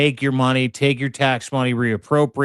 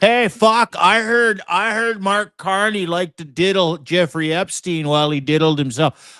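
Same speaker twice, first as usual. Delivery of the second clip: high, put-on Western Canada hillbilly accent; 5 semitones higher than usual. Joking with the other speaker, say it in a mock hillbilly accent. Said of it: "hillbilly accent".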